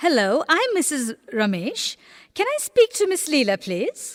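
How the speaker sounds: friendly tone with rising intonation. In a practice phone call, a caller asks for someone, rising, friendly intonation. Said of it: "in rising intonation to create a friendly tone".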